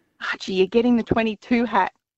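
theatrical confiding whisper. Retelling telling her son the news in his ear: imitating a half-whisper. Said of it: "I whispered in his ear".

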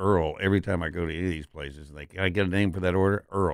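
ordinary delivery

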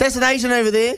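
acted-out very high, shrill call-out yell. Telling how they yelled at a woman again, retelling a yell. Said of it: "I yelled at her again".

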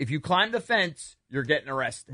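ordinary talk

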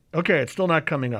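ordinary delivery

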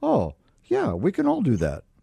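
acted casual tone. Teasing the other speaker by echoing their remark: imitating someone saying it casually. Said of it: "You say that so casually".

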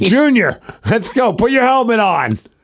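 high, eager voice. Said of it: "Dad's a big Titans fan".

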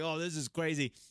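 ordinary delivery

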